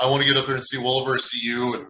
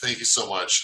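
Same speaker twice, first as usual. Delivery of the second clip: ordinary talk, nothing marked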